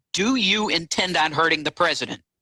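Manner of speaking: ordinary delivery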